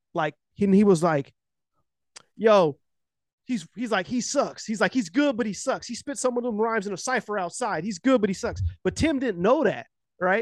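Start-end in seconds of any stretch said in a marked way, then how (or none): none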